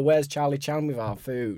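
ordinary talk

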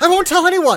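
sudden startled blurt, very high and very loud. Voicing a character who has just woken up: in-character startled blurt. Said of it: "you hear as an immediate reaction when she wakes up".

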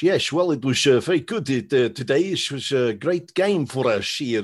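put-on Dutch accent. Imitate a guy who famously spoke english this way, in a put-on dutch accent. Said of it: "did it in a Dutch accent".

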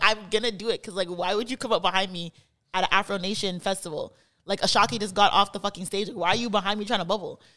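ordinary delivery

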